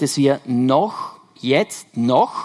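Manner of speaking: noch said slowly with heavy stress. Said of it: "Betonung auf noch".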